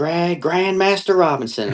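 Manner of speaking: put-on, very high-pitched screamed call. Retelling how a name was called out on stage: imitating Bruce Gary screaming. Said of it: "started screaming, he's like".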